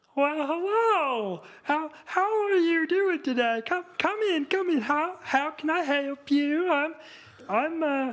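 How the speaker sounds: stretched, high-pitched hello. Voicing a clerk greeting visitors: cross between Kermit the Frog and Frozen guy. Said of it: "sounds like a cross between Kermit the Frog and that guy from, like, Frozen".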